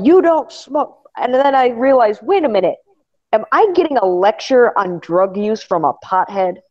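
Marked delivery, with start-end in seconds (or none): 0.0-1.1 high-pitched, irritated, angry scolding tone. Retelling getting lectured on drug use by a pothead, imitating angry scolding. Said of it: "He got mad".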